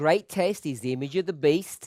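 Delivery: ordinary talk, nothing marked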